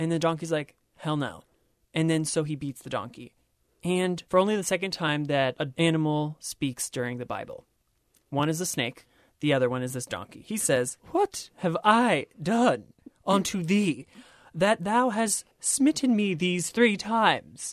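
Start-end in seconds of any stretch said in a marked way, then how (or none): 11.1-17.7 slow, high, put-on British accent. Retelling a Bible story, the speaker voices the donkey in a fake British accent. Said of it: "He has a fake British accent".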